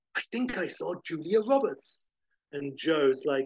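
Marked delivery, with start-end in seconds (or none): 0.1-2.0 hushed theatrical stage whisper meant to carry. Retelling a film scene where a character makes an aside: imitating a stage whisper. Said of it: "then he does a stage whisper".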